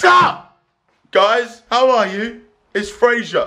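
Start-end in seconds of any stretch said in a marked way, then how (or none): 0.0-2.4 very slow, stretched-out, drawn-out call. Opening a video intro to viewers, shouting. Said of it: "I don't know why I felt like shouting".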